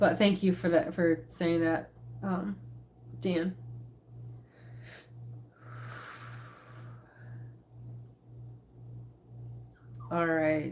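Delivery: tearful, breathy half-whisper, crying through the words. Thanking someone for kind words about their mom: crying while talking. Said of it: "I'm crying".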